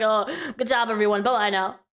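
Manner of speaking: utterly uninterested, bored delivery. Speaker mimics Keemstar coming back to close the session, mock-bored Keemstar impression. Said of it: "He sounds so bored".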